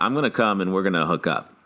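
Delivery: plain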